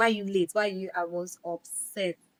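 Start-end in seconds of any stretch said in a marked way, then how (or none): none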